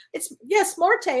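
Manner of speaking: high, panicked frantic yell, acted out. Recalling screaming to the waiters about a dead bird: retelling a panicked scream. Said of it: "And I'm screaming to the waiters".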